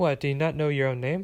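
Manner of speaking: ordinary delivery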